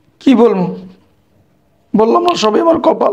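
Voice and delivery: speaking through tears. A former teacher answers his ex-student asking what happened, crying while talking. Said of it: "কান্না করেন না".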